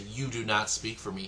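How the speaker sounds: normal talking voice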